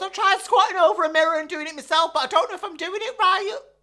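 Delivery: weepy, tearful voice, crying through the words. Retelling a friend's words on the phone, imitating Beverly crying. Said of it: "She starts crying again".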